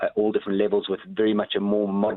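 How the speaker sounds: ordinary delivery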